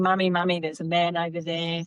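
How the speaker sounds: put-on weepy, upset crying child voice. Retelling how she started crying in her room at night: imitating someone crying. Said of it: "She started crying".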